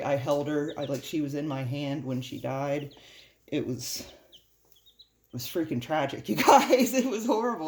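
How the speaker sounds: choked-up voice, halting and struggling. Telling viewers about one that died in her hand, choked up. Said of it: "I can barely talk about it".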